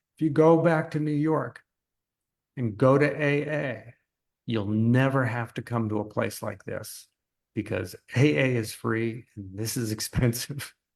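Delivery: voice choked up, catching with emotion. Recounting what someone once told them, the speaker is choking up. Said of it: "pardon me, I'm choking up".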